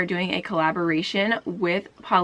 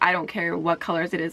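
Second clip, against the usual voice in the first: normal talking voice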